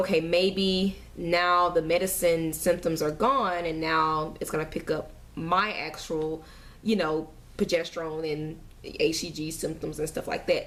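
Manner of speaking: normal talking voice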